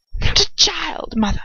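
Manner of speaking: hissing. Reading a fan story aloud, the son speaks: hissing. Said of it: "Draco hisses".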